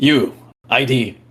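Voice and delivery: gruff, rough, demanding tone. Game master voices Mushfiq as the party marches up in uniform: gruff command. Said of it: "Mushfiq just gruffly says".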